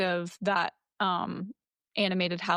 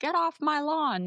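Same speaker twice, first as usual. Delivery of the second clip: high, really creepy voice; 8 semitones higher than usual. Retelling what the homeowner says to the kids: imitating a creepy old homeowner. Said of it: "but in a really creepy way".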